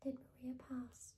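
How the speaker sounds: ordinary delivery, nothing marked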